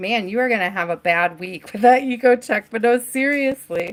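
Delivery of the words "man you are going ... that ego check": plain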